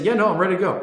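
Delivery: confident delivery. Teaching about tonality, demonstrating how a sure person answers: certain, confident tone. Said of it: "If they sound certain, they say".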